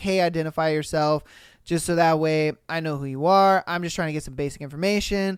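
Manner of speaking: ordinary talk, nothing marked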